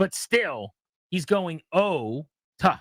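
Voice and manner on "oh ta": exaggerated, stretched-out pronunciation. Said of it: "stretching out the O".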